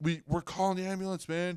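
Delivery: mock high-pitched, urgent yelling. Retelling a talk with an injured older man: retelling own yell. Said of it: "I'm yelling at him".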